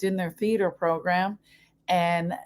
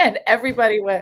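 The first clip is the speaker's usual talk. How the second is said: ordinary talk, nothing marked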